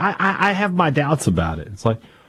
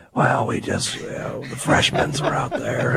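worn-out voice, much lower and quieter; 5 semitones lower, 5 dB quieter than usual. Co-host jokes that a voice is gone by mid-season, doing Rick Stansberry mid-season voice. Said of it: "The Stansberry mid-season is like".

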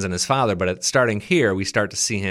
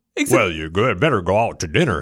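western-style American cowboy voice; 3 dB louder than usual. Describing a dubbed voice that didn't match the lips; imitating an american cowboy voice. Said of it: "It was just like American cowboy doing".

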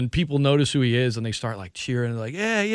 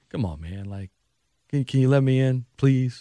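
mock nice, courteous, polite pleading voice. Retelling a plea to get let in, imitating Donovan McNabb asking nicely. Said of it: "Donovan was at least being nice".

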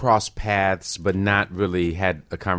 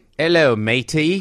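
clumsy put-on Australian accent, pitched high; 8 semitones higher, 4 dB louder than usual. Talking with others about hard accents, trying a greeting in a bad fake accent. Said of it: "I can't even do an Australian accent".

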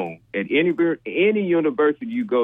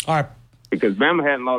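normal talking voice

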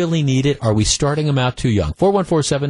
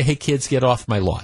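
ordinary talk

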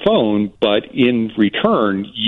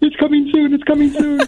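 put-on very high, thrilled, excited squealing. Telling the guest how he reacted on hearing the radio, imitating an excited squeal. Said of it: "he squealed and goes".

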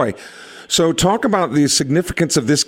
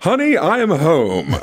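very slow, deliberate, drawn-out delivery. Imagining the guest coming home from work: imitating Barry's voice. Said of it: "but that voice you've got too".

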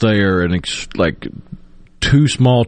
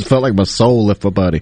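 plain

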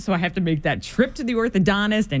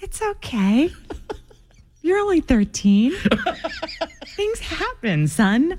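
soothing, reassuring mother voice, pitched up; 7 semitones higher than usual. A mom shows how she reacts to her 13-year-old son, calm mom voice. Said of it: "I love your calm mom voice".

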